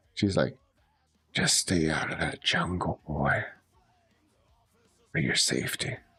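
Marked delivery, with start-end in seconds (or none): 1.3-5.9 hushed whisper, close and soft. Acting out what a woman whispered into your ear, retelling a whisper. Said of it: "she whispers something into like the crook of your ear".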